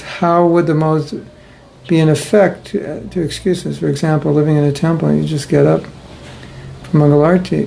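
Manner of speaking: ordinary talk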